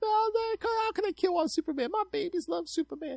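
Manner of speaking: put-on, very high-pitched, weepy, tearful crying voice. Retelling a woman crying on tv news: imitating a crying woman. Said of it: "some woman crying on T V".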